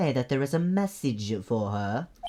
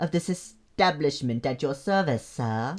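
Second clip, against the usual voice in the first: clumsy, bad put-on French accent. Playing a hotel bellboy greeting a guest, in a bad French accent. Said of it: "I'm gonna make him French".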